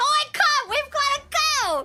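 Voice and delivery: high, full-lung bellowed shout. Recounting repeating what one of them called out, retelling a shout at top of lungs. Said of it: "I repeat at the top of my lungs".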